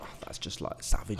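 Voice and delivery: hushed, whispered, horrified tone.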